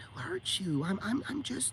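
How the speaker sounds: soft, mock gaslighting woman voice. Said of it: "when a woman's gaslighting you".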